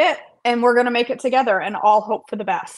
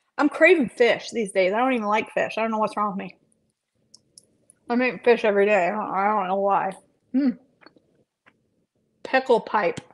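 speaking while chewing, mouth full; 4 dB quieter than usual. Speaker eating tuna while talking into headphones, talking while chewing. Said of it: "I'm chewing in my headphones".

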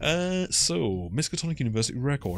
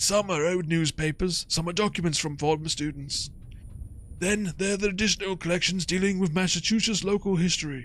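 put-on old guy voice, much higher; 7 semitones higher than usual. Voicing a character in a game, speaking in an old guy voice. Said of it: "which means I need to do an old guy voice".

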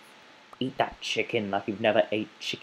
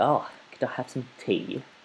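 cliché put-on British accent; 3 semitones higher than usual. Speaker who says they can't do a British accent attempts one: stereotypical British accent. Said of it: "one of those stereotypical British people".

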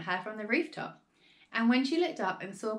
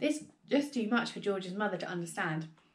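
plain

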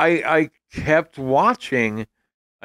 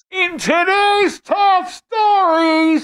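very high, very loud, slow, drawn-out newscaster voice; 5 dB louder than usual. Recalling an old comedy bit, imitating Garrett Morris giving news. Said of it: "Garrett Morris giving the news for the hear-".

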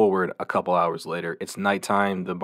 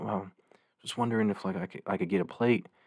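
imitated soft-spoken man's voice, quieter; 6 dB quieter than usual. Retelling a stranger in a hoodie at their door, imitating a soft-spoken man. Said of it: "he's like soft spoken".

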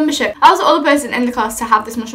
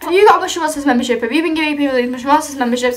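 plain

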